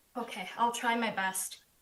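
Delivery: near-yelling. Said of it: "Pretend you're yelling at us".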